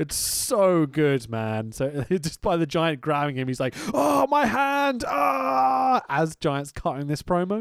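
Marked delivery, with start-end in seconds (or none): 3.9-6.0 very high, very slow, drawn-out cry of pain. Act out Gene selling his hand as the giant grabs him during a promo, acting out hand pain. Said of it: "starts selling his hand".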